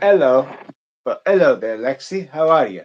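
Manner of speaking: really bad, put-on British accent. Streamer greeting a viewer during a live stream, really crappy british accent. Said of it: "a really crappy British accent".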